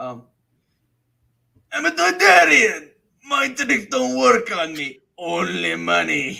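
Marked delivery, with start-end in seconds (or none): 1.7-6.4 very high, rough, gritty, loud junk-dealer voice. Speaker finally does the impression they wanted to do, Watto impression. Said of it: "I know you said you wanted to do your impression".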